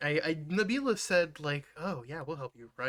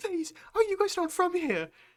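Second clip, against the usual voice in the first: very high, tearful sobbing voice broken by hiccups. Describing a crying woman who comes up to them, imitating her crying and hiccuping. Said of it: "she comes up to you crying and hiccuping".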